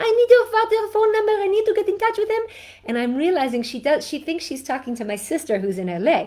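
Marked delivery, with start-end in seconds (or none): 0.0-2.4 put-on Israeli accent, pitched way up. Retelling a phone call from a first grade teacher: Rivka Shaked Israeli accent. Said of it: "She's this beautiful Israeli accent".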